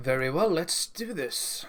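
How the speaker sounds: put-on fancy voice, a whole new way of talking. Acting out the character stepping from the car: character's changed fancy voice. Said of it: "changes the way he talks completely".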